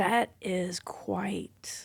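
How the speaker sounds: hushed whisper full of awe.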